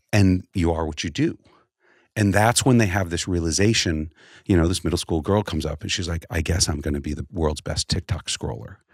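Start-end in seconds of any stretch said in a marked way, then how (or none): 6.3-8.7 put-on disappointed voice, lower. Retelling a middle school girl's realization: imitating a disappointed voice. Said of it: "the disappointment in her voice".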